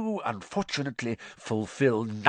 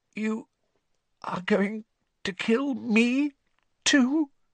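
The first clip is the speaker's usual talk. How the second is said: dry-throated, hoarse croak, pitched very high; 12 semitones higher than usual. A character answers a cold voice, hoarse as though his mouth went dry. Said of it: "voice sounded suddenly hoarse, as though his mouth had gone very dry".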